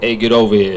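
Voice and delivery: put-on Italian accent in a fighter voice. The speaker announces his impression, then does an Italian Scorpion impression. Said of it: "my impression of uh, Scorpion from Mortal Kombat if he was Italian".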